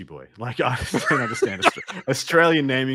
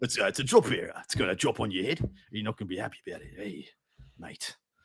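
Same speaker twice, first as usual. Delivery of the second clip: put-on bogan Australian accent; 3 semitones lower, 7 dB quieter than usual. Playing a bit about how a bogan should sound, in a bogan Australian accent. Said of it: "what a bogan [name] thinks a bogan Australian should sound like".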